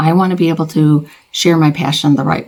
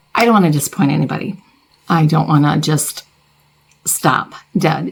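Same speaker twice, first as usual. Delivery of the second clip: voice breaking, fighting to hold back tears. Speaking to the viewers who watch them: holding back tears. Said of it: "Sorry, I'm not going to cry".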